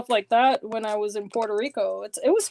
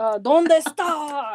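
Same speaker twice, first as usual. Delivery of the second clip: put-on loud yelling; 4 semitones higher, 4 dB louder than usual. Mocking a man who gets really loud, imitating loud yelling. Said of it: "he gets really loud when he".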